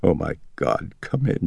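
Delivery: trembling, quavering voice gripped by fear. Reading Chris letting doctors into Reagan's bedroom, quavering voice. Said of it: "she said in a quavering voice".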